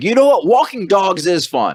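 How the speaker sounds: put-on very high, swooping, over-the-top American accent. Retelling an actor ordering at a cafe: imitating an exaggerated American voice. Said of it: "sounded American".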